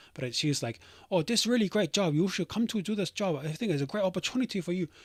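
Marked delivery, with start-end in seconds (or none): 1.1-4.8 high, put-on Chinese-accented woman's voice. Retelling a phone call from a Chinese lady: imitating a Chinese lady's accent. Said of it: "I can do the accent".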